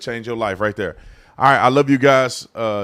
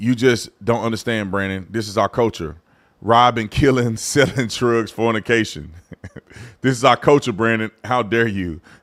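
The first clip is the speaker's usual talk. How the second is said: ordinary talk, nothing marked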